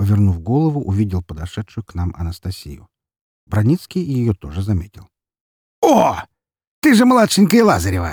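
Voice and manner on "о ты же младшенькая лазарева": very high, swooping, animated exclamation. A man exclaims as he notices a young woman approaching. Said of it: "воскликнул он".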